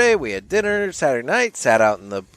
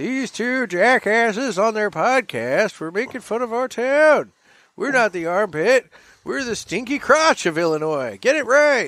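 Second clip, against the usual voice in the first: put-on very high old man voice; 10 semitones higher than usual. Imagining the town mayor scolding two podcasters, in an old man voice. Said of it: "I was doing old man".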